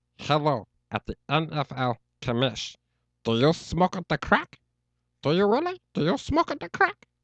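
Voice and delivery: high, loud, swooping, sing-song alien cartoon creature voice. Speaker shows off one of their favorite impersonations: Stitch impression. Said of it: "One of my favorite impersonations is Stitch from Lilo and Stitch".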